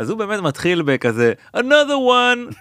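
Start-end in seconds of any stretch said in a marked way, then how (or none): 1.6-2.4 very high, forced-enthusiastic cheer, bummed underneath. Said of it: "הוא אומר את זה בהתלהבות, אבל... נשמע שהוא קצת מתבאס".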